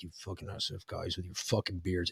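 very low, very quiet, grumbling mutter under the breath. Quoting an Army guy who always walked around like this: mumbled under the breath. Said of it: "he would mumble like that".

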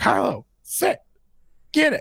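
mock little kid yell, high and swooping. Retelling how the two-year-old yelled commands: imitating a toddler yelling. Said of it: "You hear her yelling at Kylo".

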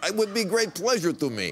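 sustained mock Russian accent.

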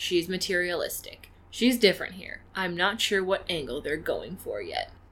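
usual speaking voice

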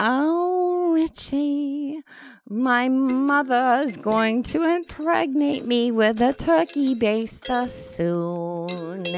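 sweet and beautiful. Reading commitment vows to a partner, Richie, sweet and beautiful. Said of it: "that actually sounded very sweet and beautiful".

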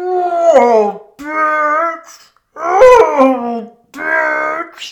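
words barked like a dog, shouted. Telling how Barbara shouted at a dog, voicing its bark: dog barking as words. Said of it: "in that dog language".

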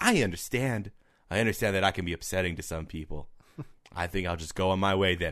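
creature voice of a talking tarantula. Imagining a pet tarantula that could talk: voicing Terry the talking tarantula. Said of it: "He puts on a tiny hat".

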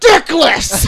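high yell blurted out through a full mouth. Retelling a movie scene with a mouthful of sandwich: imitating Arnold Schwarzenegger yelling. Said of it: "with a mouthful of sandwich, he just yells".

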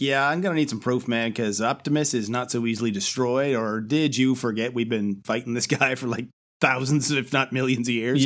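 ordinary talk, nothing marked

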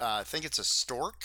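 ordinary talk, nothing marked

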